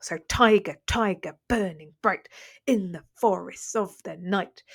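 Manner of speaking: steady trochaic beat, stressed first syllables pounded.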